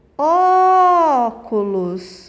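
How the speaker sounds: Ó in óculos stressed, hit hardest. Teaching portuguese word stress, óculos stressed on the first syllable. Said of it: "mais forte aqui é o ó".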